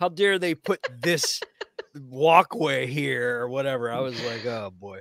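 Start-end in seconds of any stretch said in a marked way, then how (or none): none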